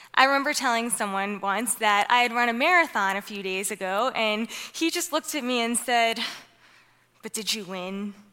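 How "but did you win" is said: play-acted haughty, dismissive tone, low and hushed. Recalling a man's reply on hearing about a recent marathon, imitating a snooty tone. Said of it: "With this snooty tone".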